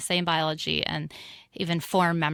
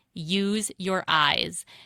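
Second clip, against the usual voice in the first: put-on, really stern voice. Recalling an early memory, the speaker quotes their teacher behind them: imitating a stern teacher. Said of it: "this really stern voice behind me".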